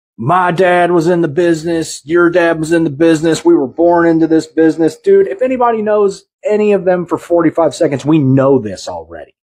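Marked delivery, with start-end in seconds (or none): 0.2-5.0 put-on babbling old man voice, higher pitched. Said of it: "sounded like a babbling old man".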